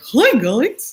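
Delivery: high, squeaky old-time cartoon mouse voice. Showing how someone's voice sounded to you, in an early Mickey Mouse voice. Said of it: "something about Swillow's voice that kind of was like early Mickey Mouse".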